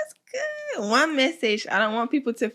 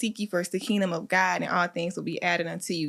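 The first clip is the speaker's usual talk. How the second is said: ordinary delivery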